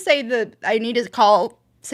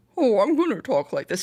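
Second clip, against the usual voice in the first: derpy, dopey, dim-witted cartoon goof voice; 4 dB quieter than usual. Describing a voice actor's delivery, imitating the character's derpy voice. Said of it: "he went from kind of like a derpy".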